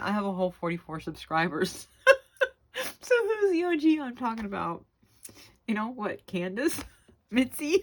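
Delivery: giggly, swooping talk through laughter. Video creator thanking viewers and subscribers, laughing while talking. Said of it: "I'm sorry I'm laughing".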